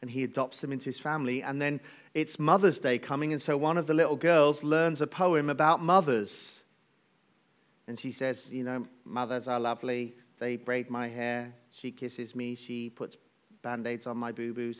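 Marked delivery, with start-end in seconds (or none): 8.5-14.8 mock flat, dry robotic voice, lower and quieter. Retelling a little girl's Mother's Day poem from a film: imitating a dry robotic voice. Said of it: "she speaks in this kind of dry, robotic kind of voice".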